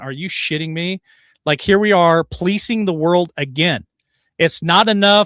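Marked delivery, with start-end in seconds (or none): 0.0-1.0 put-on muttering under breath. Retelling own reaction while watching a video: retelling muttering under breath. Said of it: "under my breath going".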